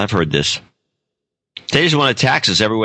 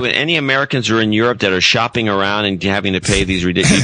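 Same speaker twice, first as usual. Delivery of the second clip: normal talking voice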